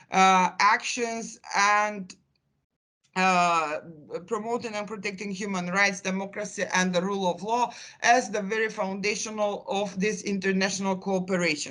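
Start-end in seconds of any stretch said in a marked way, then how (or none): none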